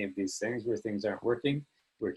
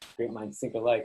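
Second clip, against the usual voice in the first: ordinary talk, nothing marked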